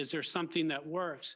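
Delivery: plain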